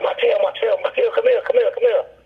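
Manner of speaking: frantic, very high, repeated screaming. Retelling friends calling from outside the shower: imitating friends screaming. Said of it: "my friends are screaming, like".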